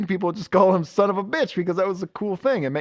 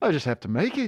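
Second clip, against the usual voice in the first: slight put-on Liverpool-style accent. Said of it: "Turned into, like, a little [name] voice there".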